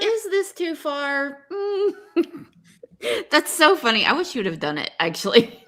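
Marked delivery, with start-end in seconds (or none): 0.0-1.5 high, slow, timid, hesitant, unsure delivery. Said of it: "You were like".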